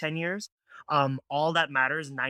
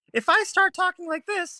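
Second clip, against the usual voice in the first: voice jumping up very high and loud; 6 dB louder than usual. Explaining how a voice's tone changes, demonstrating a high-pitched voice. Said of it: "my voice just went way higher".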